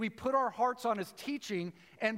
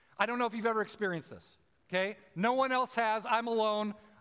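ordinary talk, nothing marked

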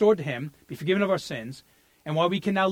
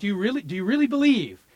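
gently rebuking, sarcastic, doubting tone; 4 semitones higher than usual. Showing the intended sarcastic reading of a question: imitating Jesus sarcastically. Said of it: "He's saying, like".

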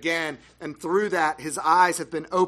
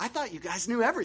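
fast, mocking, sarcastic delivery; 6 semitones higher, 5 dB quieter than usual. Retelling how he answered the Pharisees: retold sarcastic mockery. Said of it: "he sarcastically mocks their ignorance".

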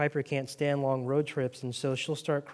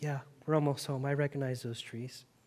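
put-on weepy voice, quieter; 6 dB quieter than usual. Near home, the speaker retells a reply to another's question, imitating Piper's weepy voice. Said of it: "in her weepy voice".

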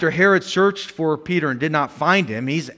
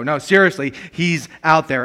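normal talking voice

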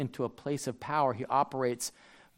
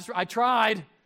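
put-on pleading, higher and louder; 8 semitones higher, 4 dB louder than usual. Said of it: "pleading with God".

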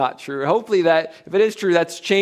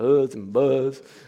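put-on Appalachian accent, done for fun; 3 semitones lower than usual. Speaker introducing names from a Bible chapter, Appalachian accent. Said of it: "If I use my Appalachian accent".

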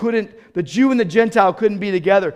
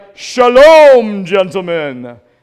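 hearty, very loud, booming professor voice; 9 dB louder than usual. Retelling how the Hebrew professor greeted the class: imitating Doctor Rigsby. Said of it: "he'd be like".

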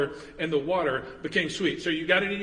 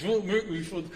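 put-on voice through gritted teeth. Retelling a parent's warning to kids in the back seat, through gritted teeth. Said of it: "Sometimes through gritted teeth".

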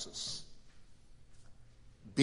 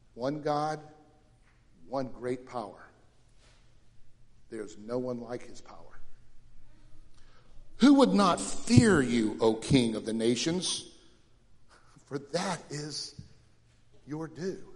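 slow, unhurried reading. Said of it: "I'm gonna read it slowly".

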